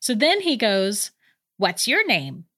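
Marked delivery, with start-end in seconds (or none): 1.6-2.4 put-on child's mechanical beeping robot voice. Retelling what a kid said to the speaker, do his robot voice. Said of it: "in like this robot voice".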